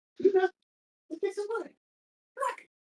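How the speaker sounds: gentle, high-pitched coaxing voice.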